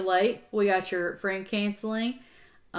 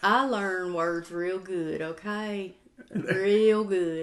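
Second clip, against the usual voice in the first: very slow, exaggerated put-on Southern drawl. Answering someone annoyed about their enunciating, in a more Southern accent. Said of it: "I didn't know you could speak more Southern".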